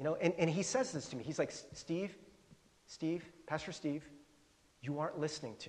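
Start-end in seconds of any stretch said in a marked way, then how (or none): 1.7-5.7 put-on gentle, soft speech, quieter. Retelling what a man said to the speaker on the phone, imitating gentle speech. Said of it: "he said it really gently".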